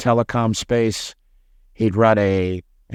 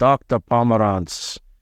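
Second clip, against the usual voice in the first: put-on thick Dutch accent laid on. Retelling a phone call with a job reference: imitating a heavy Dutch accent. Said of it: "heavy, heavy Dutch accent".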